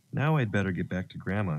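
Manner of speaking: plain reading voice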